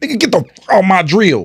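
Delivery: mock forceful emphatic tone. Retelling how someone said a line more emphatically, mock-emphatic forceful delivery. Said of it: "more emphatically, like".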